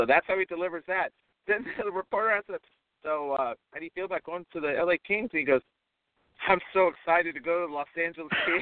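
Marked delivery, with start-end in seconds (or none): none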